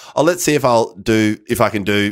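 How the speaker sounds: ordinary delivery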